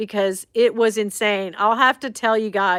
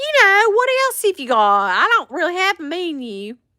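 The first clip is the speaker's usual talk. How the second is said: very high, heavily exaggerated put-on delivery; 9 semitones higher, 3 dB louder than usual. Retelling ordering food from a woman with no menu, the speaker quotes their own line, laying it on thick. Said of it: "I was laying it on thick".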